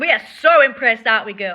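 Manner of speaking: mock impressed, sarcastic tone. Praising the other speaker's timeline: sarcastic. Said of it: "Sarcasm written all over your face".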